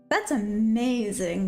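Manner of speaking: very heavy sarcastic tone. Reacting to being stuck between two four hour: very sarcastic. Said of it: "I'm being very sarcastic".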